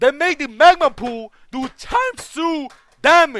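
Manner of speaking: very loud, high, cracking voice. Explaining a game update on video, voice cracking. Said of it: "my voice cracked".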